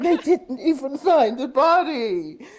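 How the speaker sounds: very high, very loud tearful wail, drawn out. Retelling what she said on hearing there was no body, imitating someone crying. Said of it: "She was crying like this".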